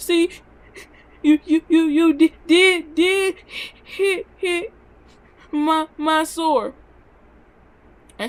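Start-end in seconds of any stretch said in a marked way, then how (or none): 0.0-6.7 very slow stammer through sobs, high, loud, drawn-out. Retelling what was said to mother after a whipping, imitating own past crying. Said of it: "I was still crying".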